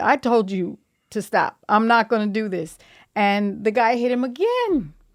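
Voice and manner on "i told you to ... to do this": put-on irritated man voice. Retelling a fight, quoting the other speaker's dad: imitating an irritated man. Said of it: "he's getting irritated".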